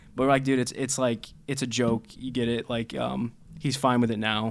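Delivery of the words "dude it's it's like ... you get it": ordinary talk, nothing marked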